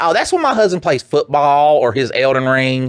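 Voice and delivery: put-on high, real country accent. Imitating wife answering school staff about son's swearing: imitating wife's country voice. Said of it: "she has that real country voice".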